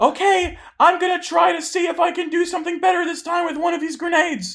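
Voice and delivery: very high, loud shouted call in a character voice. Voicing a character throwing a grenade, shouting in character. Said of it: "she has to shout it".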